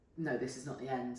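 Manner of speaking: plain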